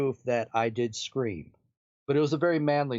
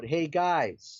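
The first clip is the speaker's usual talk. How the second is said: acted-out calling out, loud yell; 3 semitones higher than usual. Retelling calling out to the guys while left alone in the house, retelling a yell. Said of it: "So I start to yell out".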